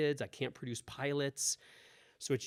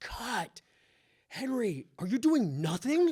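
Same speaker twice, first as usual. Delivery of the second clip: very high, drawn-out shouted scream; 10 semitones higher, 7 dB louder than usual. Retelling how someone stopped the first take of an audition: imitating Robert screaming. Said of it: "Robert screams".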